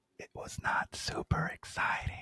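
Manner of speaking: barely audible, hushed, near-whispered voice. Repeating the previous sentence in the quietest voice possible. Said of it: "let me say it with the quietest voice".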